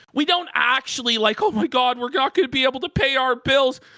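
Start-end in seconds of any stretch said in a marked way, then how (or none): 1.4-3.8 frantic, desperate, begging, pleading cry. Mocking fundraising begging among friends: mock desperate pleading. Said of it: "Phil is desperate".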